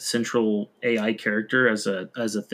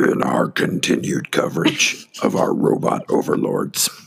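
put-on monster-like creature voice; 3 dB louder than usual. Redoing a segment intro line to a co-host, in a beast-like voice. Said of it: "You sound like a beast or something".

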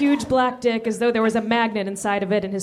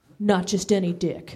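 ordinary delivery

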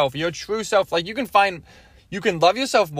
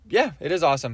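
ordinary talk, nothing marked

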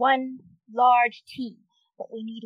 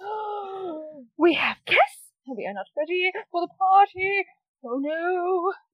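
high little man voice, oh stretched long; 6 semitones higher than usual. Telling a scene to players, voicing the small man in a small man voice. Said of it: "the small man goes".

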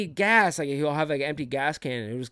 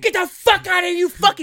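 put-on yell, higher and louder; 10 dB louder than usual. Retelling how a son treated his mom: imitating someone yelling. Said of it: "slurs and just yell at her".

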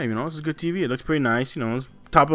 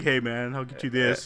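sly, sneaky salesman-style delivery; 5 dB quieter than usual. Retelling a salesman's offer of a deal: imitating a sneaky salesman. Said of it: "he's all, like, sneaky, like".

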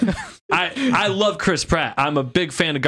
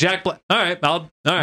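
ordinary talk, nothing marked

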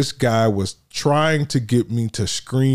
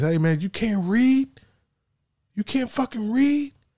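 put-on very high, climbing, jeering angry shout; 11 semitones higher, 3 dB quieter than usual. Retelling an airport confrontation, imitating a man yelling. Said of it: "the guy proceeds to yell at me".

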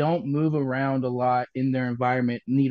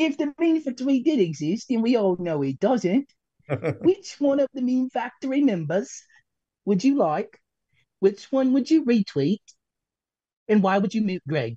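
put-on pitched-up British accent, boy's voice; 9 semitones higher than usual. Speaker asks the others a question, putting on a British accent like Preston's. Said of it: "like the British boy".

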